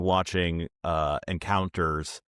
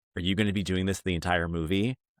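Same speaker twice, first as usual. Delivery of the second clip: severe, stern, disapproving tone. Retelling what a man at the movies said: imitating a stern man. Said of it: "he said to me very sternly".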